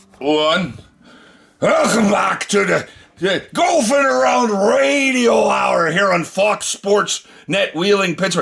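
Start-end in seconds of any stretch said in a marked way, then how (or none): 1.6-8.4 bad Scottish accent, pitched up, slipping into drunk pirate. Radio host welcoming listeners back to the show, in a bad Scottish accent. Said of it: "I'm trying to do a Scottish accent that's coming out like a drunk pirate".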